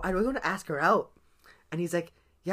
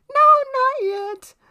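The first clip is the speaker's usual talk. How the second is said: shrill, very high, loud voice, "no" stretched out; 10 dB louder than usual. Speaker retelling asking a girl to be their Valentine, imitating her voice. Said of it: "and this is her voice".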